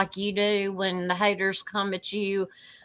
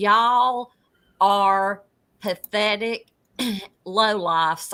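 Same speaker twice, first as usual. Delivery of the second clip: ordinary delivery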